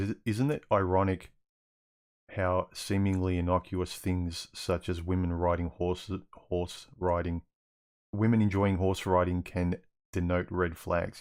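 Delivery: normal talking voice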